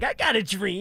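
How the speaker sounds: put-on raspy voice. Describing a teammate's voice by imitating a film character: raspy Crazy Legs voice. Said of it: "it sounds like, Crazy Legs from Don't Be a Menace".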